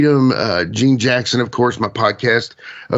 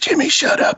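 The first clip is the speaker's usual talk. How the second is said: put-on hushed mutter, higher pitch. Retelling what Ben said to him: imitating speaking under his breath. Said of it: "breathed to me under his breath".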